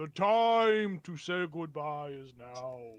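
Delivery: very slow, booming, resonant voice. Voicing a presence that speaks to the players: booming voice. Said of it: "you hear a booming voice kinda resonate".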